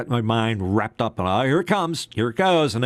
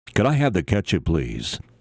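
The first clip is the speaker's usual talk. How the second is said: deep, carrying, projecting broadcast announcer voice; 4 semitones lower than usual. Demonstrating ordering at dinner in a projecting radio voice. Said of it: "that radio voice that you know projects".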